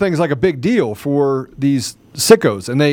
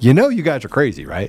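put-on calm delivery. Quoting Tucker Carlson: calm Tucker Carlson impression. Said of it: "he says it so calmly".

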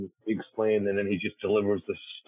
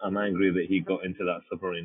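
ordinary talk

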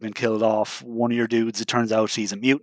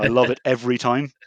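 normal talking voice

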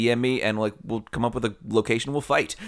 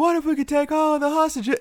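very high, movie-star style voice; 3 dB louder than usual. Correcting the other speaker's Keanu impression, doing a higher-pitched Keanu Reeves impression. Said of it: "It needs to be a little higher".

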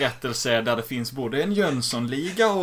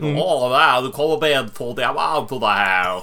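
put-on stuck-up, numb-mouthed drawl, snooty, slow and raised; 6 dB louder than usual. Speaker acts out how a man says a line, imitating a snooty delivery. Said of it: "han säger det lite så här snofsigt".

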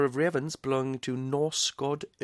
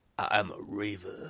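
sinister, deep, croaky, evil raven voice; 6 semitones lower than usual. Imagining how a talking raven would sound, in an evil deep raven voice. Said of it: "evil kind of deep voice".

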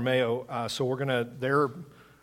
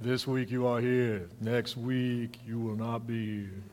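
big, movie-style giant's voice; 4 dB quieter than usual. Repeating an announcement as if heard in another voice: Andre the Giant voice. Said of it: "I could hear that in Andre the Giant's voice".

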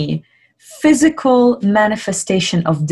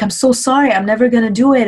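light, cheerful, careless, breezy, carefree tone; 3 semitones higher than usual. Imitating classmates who get to class late: imitating a smiley carefree apology. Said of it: "smiley and just feeling good".

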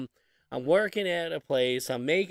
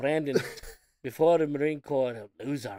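shoddy put-on English accent drifting into Irish; 2 semitones lower than usual. Quoting his grandpa calling Brandon a loser, in a bad English accent. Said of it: "This is my shitty English accent".

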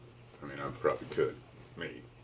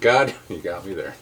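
ordinary talk

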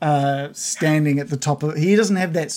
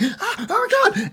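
very high, overjoyed, disbelieving laughing exclamation. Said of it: "He's like".

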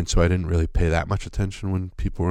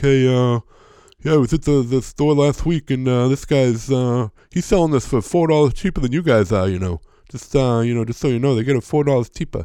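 put-on boring voice, higher and slower; 6 semitones higher, 4 dB louder than usual. Speaker recalls a tedious man who used to talk to him, imitating a boring guy's voice. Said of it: "And he talked like this".

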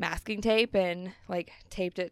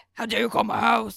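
mock-grumpy man voice; 3 semitones higher, 8 dB louder than usual. Describing calling her house, imitating the grumpy man who answers the phone. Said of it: "He answers the phone so grumpy".

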